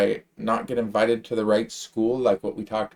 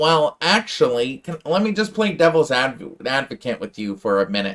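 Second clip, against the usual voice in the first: put-on little nerdy voice; 3 semitones higher, 3 dB louder than usual. Mocking their own past self in debates, use a little nerd voice. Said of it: "with my little nerd voice saying".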